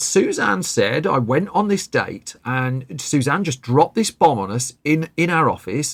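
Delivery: normal talking voice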